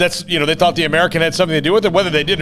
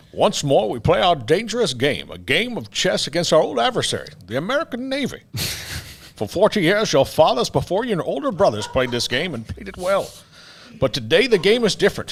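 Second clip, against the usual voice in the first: animated-film speech with pitch swooping through every line; 4 dB quieter than usual. Doing a movie line as a requested impression: Sean Connery impression. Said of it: "You want me to do Connery?".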